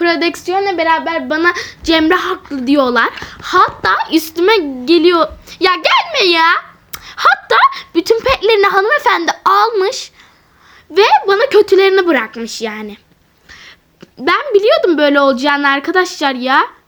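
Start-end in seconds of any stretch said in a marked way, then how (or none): 5.6-16.7 fuming, swooping, barely able to get words out. Complaining to viewers that the game is unfair, too angry to talk. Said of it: "konuşamıyorum sinirden".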